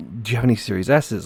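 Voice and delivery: put-on whisper. Retelling asking a store clerk for a console: imitating a whisper. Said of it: "whispering to the dude".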